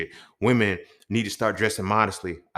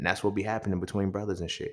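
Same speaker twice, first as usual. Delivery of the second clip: usual speaking voice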